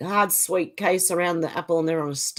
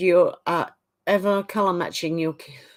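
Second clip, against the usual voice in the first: ordinary talk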